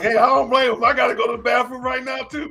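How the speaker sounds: light joking announcer voice. Retelling what the draft announcers said: imitating the announcers. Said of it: "all the announcers like".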